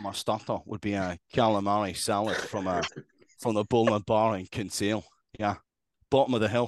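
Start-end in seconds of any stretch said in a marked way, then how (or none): 0.0-5.0 put-on Scottish accent, breaking into laughter. Trying to get into a character for the listener, put-on Scottish accent, laughing. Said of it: "I can't even do it without laughing".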